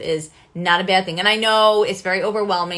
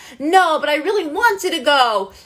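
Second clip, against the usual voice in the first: put-on high, upset, whiny childish voice; 8 semitones higher, 4 dB louder than usual. Showing how an upset child talks to a parent: imitating an upset child. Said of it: "a child is getting really upset".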